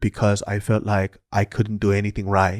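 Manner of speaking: put-on thick Korean accent. Answering the pastor as the guy: imitating a thick Korean accent. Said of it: "he has a thick Korean accent".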